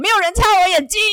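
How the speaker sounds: very high, loud shouting yell. The injured Cyclops calls to the other Cyclopes for help, yelling. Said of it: "就大叫".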